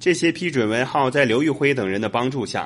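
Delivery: plain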